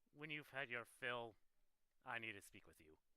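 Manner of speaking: barely audible, hushed, private half-whisper. Playing a character who half-whispers to him while walking by: half-whispering in character. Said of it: "whisper to him".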